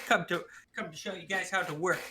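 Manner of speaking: ordinary delivery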